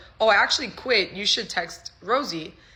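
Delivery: ordinary delivery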